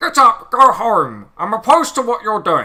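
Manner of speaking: put-on voice, loud, swooping and animated. Voicing the main character of a stream as Keir Starmer voice. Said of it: "I voiced the main character as as my Keir Starmer. You know, like".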